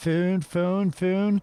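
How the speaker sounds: attempted Philadelphia accent. Discussing regional accents, trying out an attempted Philly accent. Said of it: "But the Philly one is really bizarre".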